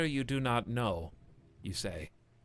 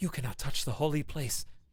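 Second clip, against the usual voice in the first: loud, carrying stage whisper. An animated skeleton blocks the way to the altar: skeleton's whisper. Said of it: "he whispers".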